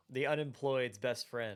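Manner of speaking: thick, laid-on, heavily sarcastic tone. Joking about a buddy without a job who loved the game: super sarcastic. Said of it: "I say that super sarcastically".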